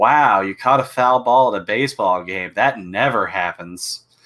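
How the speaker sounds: sarcastic, mock-approving tone. Retelling a father-in-law's reply to a baseball photo: imitating a sarcastic remark. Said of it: "her dad was being sarcastic".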